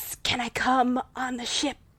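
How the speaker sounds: soft, sibilant, hissing snake voice. Speaker voices a snake character, snake voice. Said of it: "the snake then is like".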